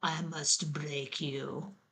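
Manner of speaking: put-on low, quiet Russian accent. Talking about Rocky Four, quoting the Russian boxer's line: Ivan Drago Russian accent. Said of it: "That's my Russian accent".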